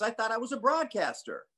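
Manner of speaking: very high, obnoxious put-on announcer voice. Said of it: "I literally used to talk like this".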